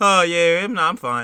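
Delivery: mock sarcastic delivery. Retelling what a man in a video said: imitating a sarcastic tone.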